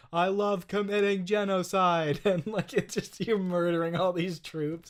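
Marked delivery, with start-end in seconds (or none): 0.1-2.2 robotic, mechanical, automated computer voice. Describing a game turret's ai that talks to you, in a robotic automated voice. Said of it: "the automated voice that sounds like this".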